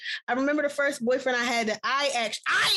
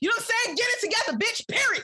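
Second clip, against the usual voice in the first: loud hollered, in-your-face yelling rant; 10 semitones higher than usual. Showing how a yelling version of the point would sound: imitating a yelling rant. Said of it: "I wasn't gonna yell at y'all like that".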